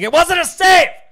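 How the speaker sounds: put-on screaming. Recounting watching a race with Brad, quoting own outburst: retelling a scream. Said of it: "and I was screaming".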